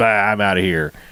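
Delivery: put-on huffy, flustered outburst. Retelling how the movie's hero storms off the set: imitating someone storming off in a tizzy. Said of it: "runs off in a, in a tizzy".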